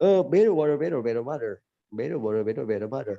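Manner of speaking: American pronunciation, flapped t's. Repeating a phrase for listeners to compare, the speaker uses an american accent. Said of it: "di American accent itu kayak gitu".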